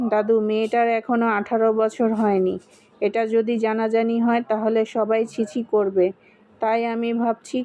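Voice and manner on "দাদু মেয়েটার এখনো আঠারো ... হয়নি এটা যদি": usual speaking voice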